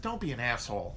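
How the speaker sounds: whiny, wheedling, coaxing and pleading voice. Voicing what the Democratic Party says, in a mock-wheedling voice. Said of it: "in a wheedling voice".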